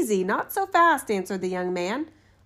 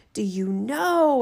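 terrible, dreadful voice. Reading the tale, the narrator gives the freed spirit's question to the student in a terrible voice. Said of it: "it cried in a truly terrible voice".

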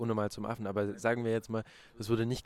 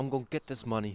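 normal talking voice

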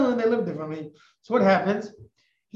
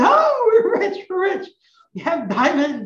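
mock-excited joyful cry, much higher, louder; 10 semitones higher, 5 dB louder than usual. Retelling a story where a woman finds diamonds in his pockets: retelling her excited cry. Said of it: "And she's all excited".

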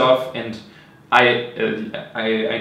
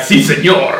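big, loud, macho wrestler shout in Spanish; 4 semitones higher, 6 dB louder than usual. Imagining big wrestlers trading lines in the ring: imitating Spanish-speaking wrestlers. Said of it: "very big dudes with hairy chests speaking Spanish".

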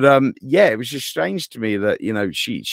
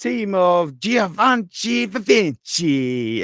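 very slow, drawn-out, high, put-on Italian accent; 8 semitones higher than usual. Retelling how she announces the team, imitating an Italian accent. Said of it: "she does it in this like Italian accent".

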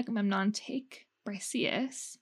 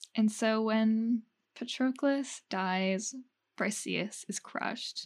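slow, measured, careful and deliberate speech. Retelling the story of patroclus and briseis, speaking slowly. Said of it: "That's why I'm speaking so slow".

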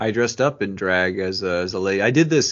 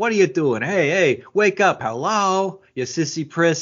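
mock aggressive taunting, pitched up, in-your-face; 7 semitones higher than usual. Recapping a scene where Martha taunts a teammate, imitating Martha's aggressive taunting. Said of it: "Martha's like aggressively just trying to like".

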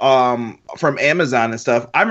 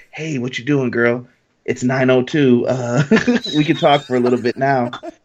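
put-on late-night romantic lover voice, lower and slower; 3 semitones lower than usual. Speaker shows the voice he used on late-night phone calls, in a late-night lover voice. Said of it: "my late night lover voice".

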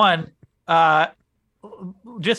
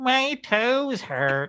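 put-on cartoon old-man voice, pitched up; 6 semitones higher, 4 dB quieter than usual. Speaker retells going to the doctor for marijuana, in a Mr. Magoo voice. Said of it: "I turn into Mr. Magoo and I go".

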